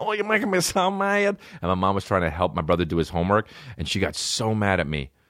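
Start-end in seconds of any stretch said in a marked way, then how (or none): 0.0-1.4 high, funny little voice, squeaked out. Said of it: "I kept saying".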